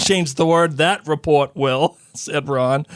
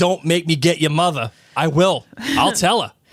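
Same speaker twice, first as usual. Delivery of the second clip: Boston-accented speech. Answering a viewer's suggestion, doing Mr. Weasley with a Boston accent. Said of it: "Mister Weasley with a Boston accent like mine".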